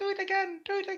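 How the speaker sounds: tiny, piping, very high little voice. Describing a voice heard from the snickering crowd, tiny voice. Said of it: "a tiny voice saying".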